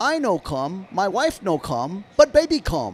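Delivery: put-on Japanese-accented English with swooping pitch. Retelling what a man said during the game when Otani was having a baby, put-on Japanese accent. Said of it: "he said in the Japanese accent".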